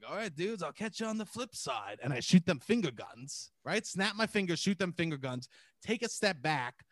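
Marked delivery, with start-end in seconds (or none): 0.1-2.0 put-on drunk voice, higher and quieter. Retelling saying goodbye to friends while messed up: imitating being drunk. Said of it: "And I was fucked up".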